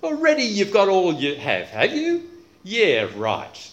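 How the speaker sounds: swooping, biting, mock-agreeing ironic sarcasm. Reading a Bible verse aloud to show its tone, sarcastic reading. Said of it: "He's using sarcasm".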